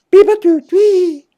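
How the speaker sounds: high, loud robotic droid beeping sounds.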